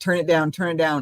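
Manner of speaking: ordinary talk, nothing marked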